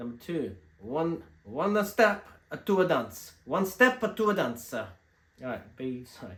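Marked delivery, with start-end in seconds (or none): 0.0-4.7 loud, high-pitched, put-on Italian accent. Announcing a dance mix track for listeners, in an Italian accent. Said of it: "I'll try and do it in an Italian accent for you".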